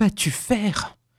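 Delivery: strangled murmur. Narrator reads a husband holding his wife back by the arm, strangled murmur. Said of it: "murmura-t-il d'une voix étranglée".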